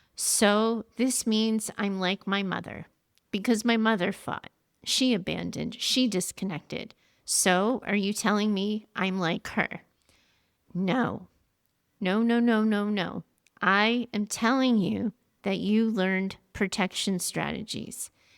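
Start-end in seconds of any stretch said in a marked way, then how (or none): none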